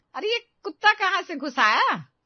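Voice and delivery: piercing, shrill, high-pitched yell, very loud. Vinita calls out inside the house after the door was left open: shouting. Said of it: "तभी विनीता चिल्लाती है".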